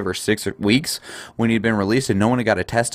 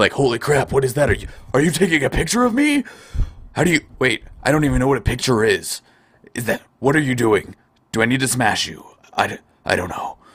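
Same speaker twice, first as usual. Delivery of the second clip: bewildered, startled orc voice, caught off guard; 3 semitones higher than usual. Voicing the orc shown in a picture, in a surprised orc voice. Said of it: "he kind of looks like he's surprised".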